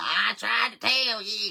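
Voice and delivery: put-on drawling, high, swooping Louisiana Cajun accent. Picturing Susan over there cussing: Susan's Louisiana Cajun voice. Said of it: "in her Louisiana Cajun voice".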